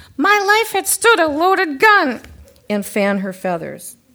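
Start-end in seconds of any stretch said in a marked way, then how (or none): 0.2-2.2 very high, very loud, fiery, shrill parrot screech. A usually taciturn parrot, when pushed, bursts out with a fiery shout. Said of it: "she'd become fiery and shout".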